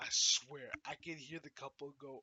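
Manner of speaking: ordinary delivery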